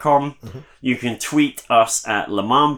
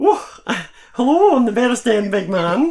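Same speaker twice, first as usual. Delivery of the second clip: put-on very high, flirty Glasgow accent; 11 semitones higher, 3 dB louder than usual. Repeating the sign-off name the way a local would: put-on flirty Glasgow accent. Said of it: "It's that kind of an accent you get".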